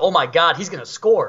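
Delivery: light, mild exclaimed call-out, acted. Retelling standing up and calling the score: imitating saying it loudly. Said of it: "I said it pretty loudly".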